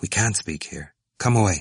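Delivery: ordinary delivery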